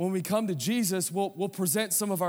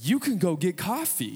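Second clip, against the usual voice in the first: put-on, condescending, talking-down tone. Retelling what an intimidating tall guy told him: imitating a condescending voice. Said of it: "in a condescending voice".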